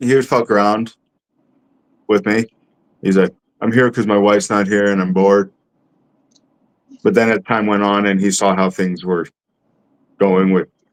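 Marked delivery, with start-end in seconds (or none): none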